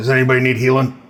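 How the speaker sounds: thick, very gruff character voice. Voicing a very tall character who walks up to the group, very gruff voice. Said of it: "says in a very gruff voice".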